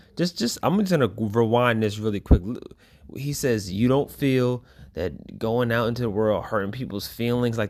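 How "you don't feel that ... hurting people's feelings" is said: ordinary delivery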